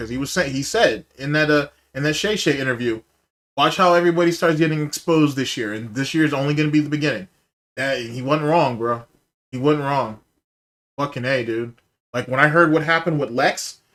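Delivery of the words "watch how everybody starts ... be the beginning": usual speaking voice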